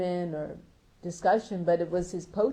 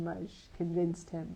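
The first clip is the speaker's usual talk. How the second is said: usual speaking voice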